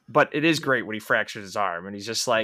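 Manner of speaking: ordinary talk, nothing marked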